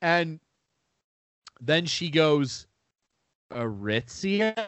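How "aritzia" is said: put-on puzzled, doubtful, unsure tone. Retelling how a store clerk repeated the store's name: imitating her unsure questioning tone. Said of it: "like a question".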